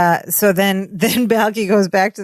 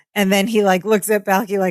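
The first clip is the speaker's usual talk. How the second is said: usual speaking voice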